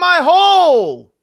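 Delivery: very shrill, very loud, high pained shriek. Retelling what a woman screamed after falling, imitating a pained scream. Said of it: "When she screamed".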